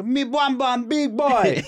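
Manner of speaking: very high, slow, drawling put-on Jamaican accent. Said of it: "he'd be at the Grammys, whatever, and be like".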